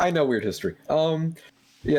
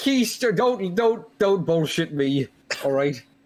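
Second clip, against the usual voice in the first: slow, deliberate, slightly angry tone; 3 semitones higher than usual. Confronting a party member about not looking for guards: a little mad. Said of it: "I may be a little mad".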